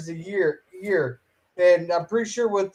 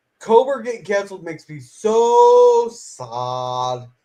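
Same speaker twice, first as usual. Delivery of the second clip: slow, drawn-out, sarcastic voice with fake sadness; 3 dB louder than usual. Announcing a sarcastic remark about a show's cancellation: sarcastic. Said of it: "sarcasm alert".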